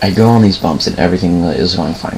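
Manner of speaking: ordinary talk, nothing marked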